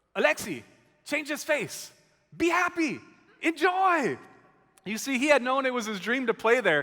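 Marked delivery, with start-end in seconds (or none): 0.1-4.1 higher-pitched, swooping, slow, drawn-out sing-song voice. Telling a church how he came up to a player who was down, in Ricky Rubio's kind of higher-pitched voice. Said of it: "he's got this kind of higher-pitched voice".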